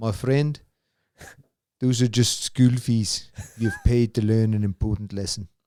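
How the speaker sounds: put-on spot-on South African accent. Quoting a south african vet who once gave advice, in a south african accent. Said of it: "and you did the accent perfectly too".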